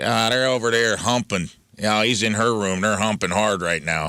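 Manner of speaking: put-on Chicago accent with drawn-out "u" vowels. Retelling how the Chicago guys talked: imitating a Chicago accent. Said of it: "those guys would talk like this a lot".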